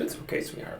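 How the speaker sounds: soft, gentle, unvoiced hushing whisper.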